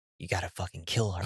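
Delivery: hushed, very quiet half-whisper. Retelling what the half-whisper said to the character: imitating a half-whisper. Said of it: "it was that whisper".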